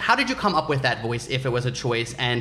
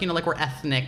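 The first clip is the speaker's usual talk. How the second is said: ordinary talk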